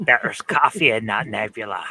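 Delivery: low, croaky voice.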